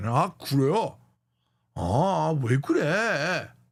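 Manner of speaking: slow stock Korean accent. Showing that sounding right in korean means speaking stereotypically: stereotypical korean accent.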